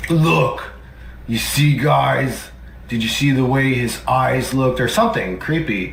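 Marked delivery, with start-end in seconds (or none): 0.1-4.8 sneering, mocking put-on voice. Retelling what the other person says on stream: mocking impression of the other person. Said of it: "a pathetic attempt to do a voice impression of me".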